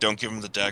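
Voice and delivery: hushed, secretive half-whispered aside. Half-whispering a warning to a companion about a dagger: half-whispering. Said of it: "I whisper to Sturg".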